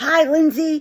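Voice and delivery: high, raspy chain-smoker voice. Retelling how her aunt appeared in front of her and greeted her: Aunt Loretta's raspy voice. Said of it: "with her raspy ass voice".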